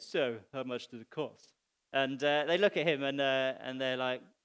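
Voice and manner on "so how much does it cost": mock self-satisfied, knowing, low, smug tone. Retelling what the show's host says to the builders at the end, mock-smug Kevin McCloud. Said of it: "he smugly says at the end".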